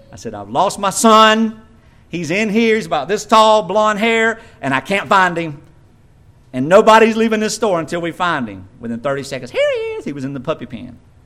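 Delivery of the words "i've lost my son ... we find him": plain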